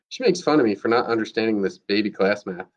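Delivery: plain reading voice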